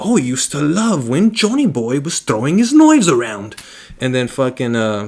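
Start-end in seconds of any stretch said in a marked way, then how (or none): 0.0-3.6 swooping put-on British accent. Retelling a funeral scene where characters share memories: put-on British accent. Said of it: "With the British accent".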